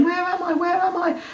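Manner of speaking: very high-pitched, toy-like character voice. Voicing the vacuum without its eyes: Hetty the vacuum voice. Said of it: "She's saying".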